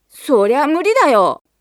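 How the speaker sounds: big, loud, high-pitched voice. A narrator reads a brother answering his sister's playful remark, retorting loudly. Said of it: "とジミーが大きな声で言い返しました。".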